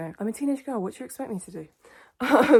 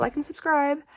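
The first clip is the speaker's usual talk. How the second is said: bad fake American accent, higher pitch; 7 semitones higher than usual. Asking viewers to subscribe, joking: terrible put-on american accent. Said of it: "that terrible American accent".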